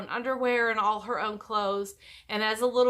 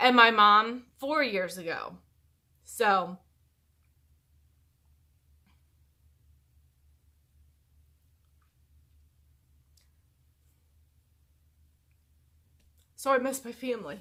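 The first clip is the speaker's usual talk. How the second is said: tearful, on the edge of crying, holding back tears. Speaking to the listeners, trying not to cry. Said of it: "I'm trying not to cry".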